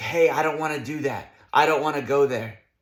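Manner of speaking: plain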